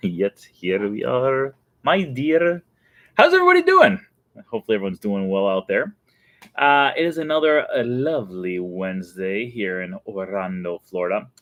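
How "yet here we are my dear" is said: very slow put-on vampire drawl. Host opening the Wednesday show and greeting listeners, in a vampire voice. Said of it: "I am talking like a vampire".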